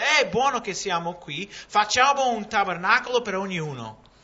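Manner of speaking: high, loud, impulsive eager blurting. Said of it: "Dice quello che viene in mente".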